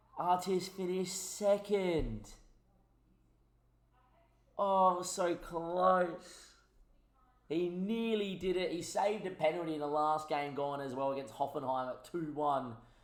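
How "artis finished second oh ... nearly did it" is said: very slow, pitched-up, pained, anguished lament. A YouTuber greets viewers and reports a result, anguished. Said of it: "you can probably hear the anguish in my voice".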